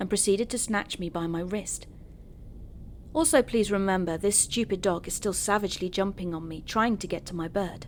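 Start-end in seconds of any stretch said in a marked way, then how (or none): none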